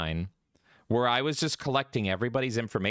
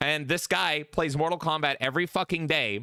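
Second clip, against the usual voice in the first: ordinary talk, nothing marked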